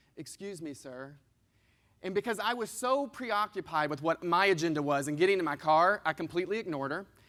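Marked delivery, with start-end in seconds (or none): 0.2-1.1 sweetest tone, very hushed and soft. Retelling a woman calling after him as he walked to his car, imitating a very sweet tone. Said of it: "the sweetest tone I've ever heard".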